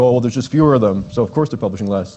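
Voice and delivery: put-on typical dude bro voice. Presenting research numbers, voicing an imagined objection in a dude bro voice. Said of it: "It's supposed to be a dude bro voice".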